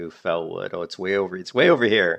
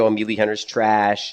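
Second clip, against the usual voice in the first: usual speaking voice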